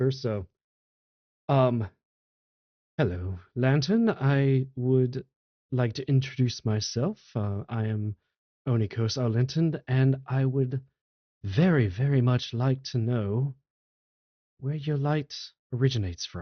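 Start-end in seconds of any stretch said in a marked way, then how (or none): 3.0-16.4 whispered, hushed voice. A player's character leans in to introduce themselves to a lantern, whispering. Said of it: "I do have to whisper".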